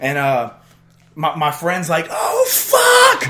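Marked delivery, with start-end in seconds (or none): 2.1-3.3 mock freaking out, very high and very loud. Retelling a near fall from a train as a friend reacts: imitating Sean freaking out. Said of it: "My buddy Sean's just, like, freaking out".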